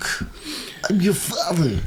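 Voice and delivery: very high-pitched put-on voice. Trying out a Christopher Walken impression of Darth Vader. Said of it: "Christopher Walken doing Darth Vader would be good".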